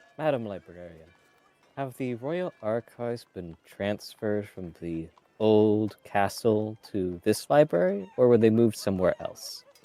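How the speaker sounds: soft, gentle, quiet and kindly. A player speaking as Uther, addressing the librarian, soft gentle voice. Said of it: "in a soft voice".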